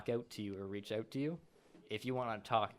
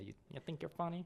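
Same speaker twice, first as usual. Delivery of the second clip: put-on nasal goblin voice, higher and quieter; 7 semitones higher, 4 dB quieter than usual. Retelling what a goblin said to the listener, in a nasally goblin voice. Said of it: "It was in a more nasally voice".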